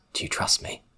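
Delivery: hushed, soft, breathy whisper. Voicing a character who looks at a player: whispering.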